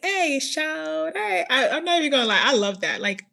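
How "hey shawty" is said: put-on pitched-up southern Carolina accent. Teasing a listener from Carolina, imitating the listener's Carolina accent. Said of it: "You got an accent and everything".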